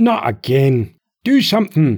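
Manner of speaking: slow, enraged, furious bellowing roar. Burback, his arm clipped by another shot, roaring furiously. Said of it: "he roared furiously".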